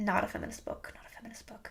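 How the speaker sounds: unvoiced, very soft whisper.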